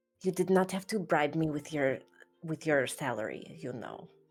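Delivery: theatrical whisper. A woman answers someone hoping she'll stay with them, in a stage whisper. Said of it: "in a stage whisper".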